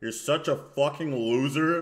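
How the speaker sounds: unenthusiastic, scornful tone. Showing how an insulter talks: Moist Critical flat unenthusiastic voice. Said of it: "in the most, like, non, like, enthusiastic way possible".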